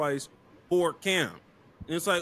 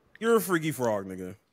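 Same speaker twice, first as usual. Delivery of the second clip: ordinary delivery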